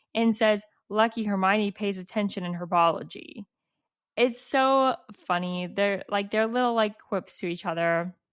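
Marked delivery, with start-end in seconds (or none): none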